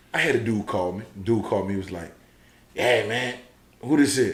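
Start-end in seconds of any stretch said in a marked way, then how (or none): 2.7-4.3 rasping, hoarse-sounding voice. Retelling a phone call from a caller: imitating a raspy caller. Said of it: "you know it's a raspy".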